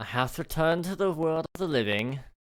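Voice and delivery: British English accent, put on. A streamer talking to his chat: British accent. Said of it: "I don't know why I'm giving you a British accent".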